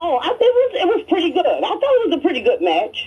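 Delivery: voice shooting up really high, swooping. Answering a question about a wrestling match: voice going really high. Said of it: "Your voice went really high just now".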